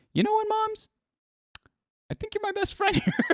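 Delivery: very high, top-of-range, highest-pitched voice. Acting out what he said to the moms, in a very high-pitched voice. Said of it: "He said it with the highest pitch".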